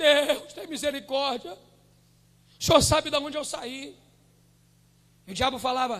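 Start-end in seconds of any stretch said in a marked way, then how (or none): 0.0-4.0 tearful, crying pleading voice. Retelling own past prayer on the mountain: retelling own tearful plea. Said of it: "chorava e falava".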